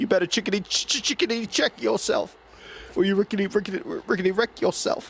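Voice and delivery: hard, looping stutter, pitched way up. Imitating someone saying a line with his stutter: Stuttering John stutter. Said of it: "but with his stutter".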